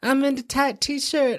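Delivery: mocking ditzy girl voice.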